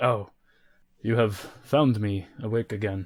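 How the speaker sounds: weary, tired giant voice. Voicing a tired Goliath prisoner in a cage: tired Goliath voice. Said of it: "he turns right and he looks at you and he says".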